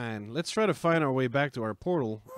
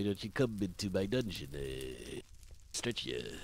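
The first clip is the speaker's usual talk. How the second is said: put-on very old wrestler-style voice, low and soft; 5 semitones lower, 7 dB quieter than usual. Correcting a guess of Clint Eastwood, the speaker does a Stu Hart impression. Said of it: "A very very old Canadian wrestler called Stu Hart".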